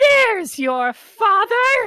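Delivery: painfully shrill, loud, very high voice. Reading a game scene aloud, a character's line in a high-pitched, painfully shrill voice. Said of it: "the high-pitched, painfully shrill voice returns".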